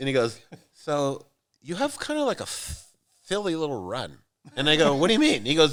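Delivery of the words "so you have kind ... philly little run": put-on lisp in a higher voice. Retelling a breakfast story, quoting his friend Greg: imitating Greg's lisp. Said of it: "and he has a lisp".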